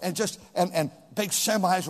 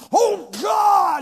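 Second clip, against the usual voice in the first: very high, shrill, petulant tantrum cry; 13 semitones higher, 8 dB louder than usual. Imitating frustrated people who cry out at God: imitating an irreverent temper tantrum. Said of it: "a puny little man throwing a temper tantrum".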